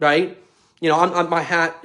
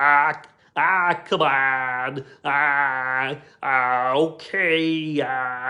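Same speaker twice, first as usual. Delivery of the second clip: exaggerated, very slow drawl, every ah stretched out; 2 semitones lower, 3 dB quieter than usual. Showing how the comedian sounds, exaggerating it: imitating Ray Romano, exaggerated. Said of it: "I'm exaggerating it some".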